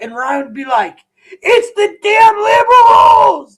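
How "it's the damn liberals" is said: top-of-the-lungs shriek, very high and drawn-out. Retelling how Ryan used to blame the liberals: imitating someone screaming. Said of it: "screaming at the top of his lungs".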